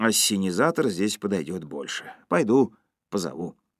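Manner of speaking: ordinary delivery, nothing marked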